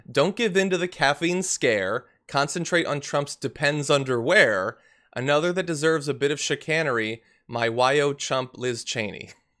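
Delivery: ordinary delivery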